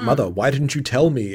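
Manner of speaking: plain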